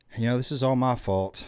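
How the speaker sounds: ordinary delivery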